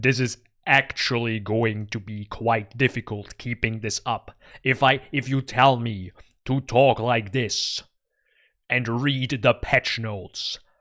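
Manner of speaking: deep, epic movie-trailer narrator delivery. Trying to keep up the voice from the trailer, deep movie-trailer voice. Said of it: "make my voice as deep as the voice in the trailer".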